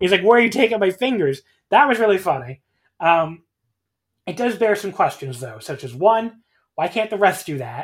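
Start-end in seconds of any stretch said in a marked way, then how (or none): 0.2-1.4 put-on distraught yell, higher and louder. Retelling Tama on the apron insisting the fingers are his: imitating Tama yelling distraught. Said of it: "is yelling, like, insisting the fingers are his".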